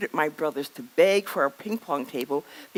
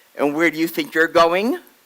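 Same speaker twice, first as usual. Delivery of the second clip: booming, loud delivery; 6 dB louder than usual. Retelling how Daddy stopped her as she left the table, retelling a booming voice. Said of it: "this booming voice says".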